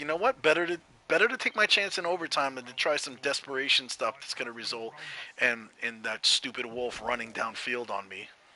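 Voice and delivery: normal talking voice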